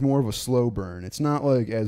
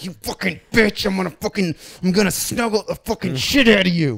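mock-aggressive gritted-teeth yell, much higher and louder; 8 semitones higher, 6 dB louder than usual. Describing a movie scene, acting out a character kissing and yelling: retelling a gritted-teeth yell. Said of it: "kissing her with like gritted teeth and yelling".

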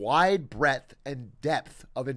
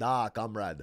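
put-on Russian accent; 5 semitones lower, 6 dB quieter than usual. Showing off doing any accent on command: Russian accent.

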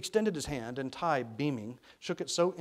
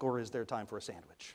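ordinary delivery

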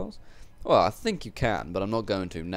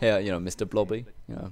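ordinary delivery

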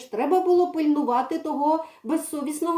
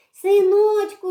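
joyful, delighted cry, high and loud; 5 semitones higher, 7 dB louder than usual. A girl grabs the cat and calls out to it, a joyful exclamation. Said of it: "радісно вигукнула Марійка".

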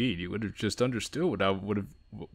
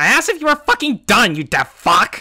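shrill, very high, very loud, enraged scream; 13 semitones higher, 13 dB louder than usual. Reading a visual novel aloud, a girl yells at her bully: furious shout. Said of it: "The entire school could have heard that".

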